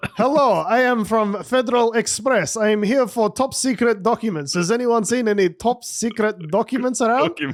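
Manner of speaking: put-on high-pitched Russian accent. Playing an invented FedEx courier, Vasily in a Russian accent. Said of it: "I think Russian accents are still not racist".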